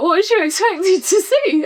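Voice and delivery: speaking through laughter. Retelling own reply to a sister's remark: laughing while retelling own words. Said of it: "And I laughed, like".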